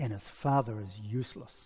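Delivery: hushed, low voice. Quoting the speaker's wife after a long pause, retelling her quieter voice. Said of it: "she says in a quieter voice".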